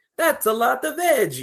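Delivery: put-on Italian accent. Saying a pizza's name the way an Italian guy would: Italian guy voice. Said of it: "That sounds like an Italian guy".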